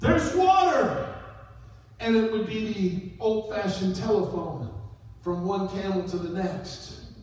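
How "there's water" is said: high, loud shouting. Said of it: "he would shout".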